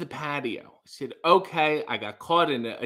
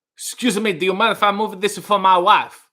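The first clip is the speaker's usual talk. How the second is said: comic put-on voice, raised high and loud; 5 semitones higher, 7 dB louder than usual. Retelling what a man asked about the umbrella: Borat voice. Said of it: "difficult to say that in a non-Borat way".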